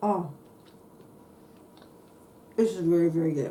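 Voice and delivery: muffled words spoken through chewing, mouth full. Tasting the pineapple bread after dribbling glaze: talking with food in mouth. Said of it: "talking with my food in my mouth".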